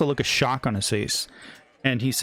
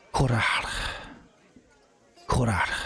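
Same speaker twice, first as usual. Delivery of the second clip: hushed, low-voiced utterance. A game master voicing a character answering what the players are hunting, in a low, hushed tone. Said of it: "in a low, hushed tone, he says".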